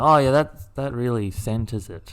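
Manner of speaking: plain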